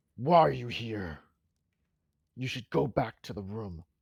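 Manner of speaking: grunted delivery. Game master voicing a character who confronts the player, grunting voice. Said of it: "He grunts at you".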